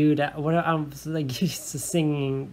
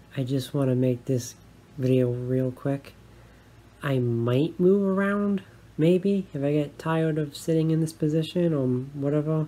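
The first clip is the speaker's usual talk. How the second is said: easygoing, casual, restrained, held-back talking. Recording a quick video at nighttime, speaker keeping voice down. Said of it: "I have to keep my voice down because it's nighttime".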